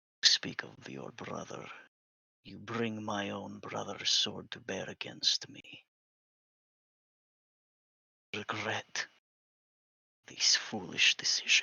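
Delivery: speaking in a low voice. A character addresses you directly after you bring the sword, in a low voice. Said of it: "He says to you in a low voice".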